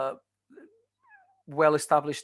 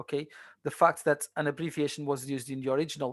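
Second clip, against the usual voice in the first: normal talking voice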